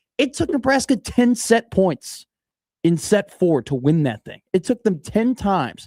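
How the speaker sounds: slightly angry. Recapping Nebraska's long fourth-set win to the other speaker, with a little anger. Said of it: "with a little anger in your voice".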